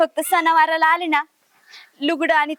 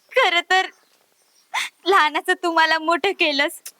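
weeping, tearful crying. Sister apologising to her elder brother, crying. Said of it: "नको रडू नको".

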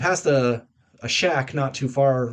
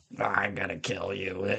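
eerie, very quiet, creaky, low, slow rasp; 5 semitones lower, 9 dB quieter than usual. Retelling a story, voicing the caller on the other end of a phone: creepy phone voice. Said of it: "some creepy voice on the other end".

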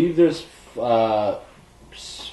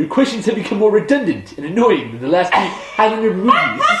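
pitched-up comic-shop nerd voice; 5 semitones higher than usual. Asked to do it again, the speaker does a Comic Book Guy voice. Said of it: "Do it again".

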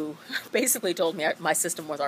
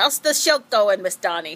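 bad, horrible put-on Swedish accent, loud; 4 semitones higher, 7 dB louder than usual. Teacher quotes her old student who lives in Sweden, in a horrible put-on accent. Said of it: "That's a horrible accent".

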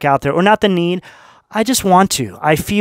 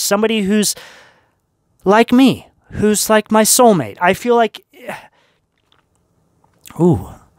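choked-up, emotional voice catching with feeling; 4 semitones higher than usual. Giving a Scorpio reading to viewers, choked up. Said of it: "got a little choked up there".

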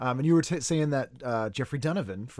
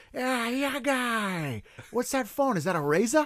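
put-on Boston accent, pitched much higher; 12 semitones higher than usual. Retelling an episode where he walks up to a guy, in a boston accent. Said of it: "he always did Boston accent".

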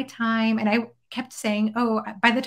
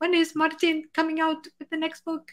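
put-on eager voice with a Mexican accent; 6 semitones higher than usual. Retelling what her dad kept asking her: imitating Dad's Mexican accent. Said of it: "with his like Mexican accent".

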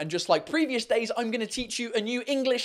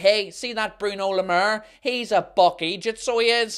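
broad Northern Irish accent; 4 dB louder than usual. Explaining the insult buck eejit, showing its use: northern irish accent. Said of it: "you do have to say it in a Northern Irish accent. Like".

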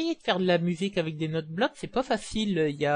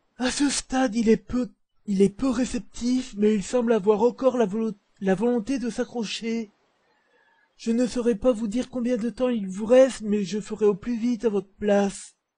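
put-on old man voice, pitched up; 5 semitones higher, 3 dB louder than usual. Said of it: "je vais lui faire une voix de vieux".

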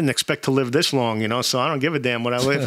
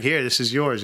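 ordinary talk, nothing marked

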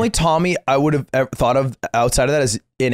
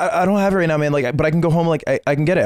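play-acted scared, timid, stumbling little-kitten voice; 3 semitones higher than usual. Retelling what the caller said when asked for money: imitating someone nervous. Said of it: "sounded like a nervous little kitten".

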